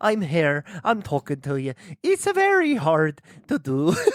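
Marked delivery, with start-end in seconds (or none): 0.0-1.7 put-on Irish accent, faster. Given a hard accent to try, a player attempts an Irish accent. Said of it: "Irish Science Jim".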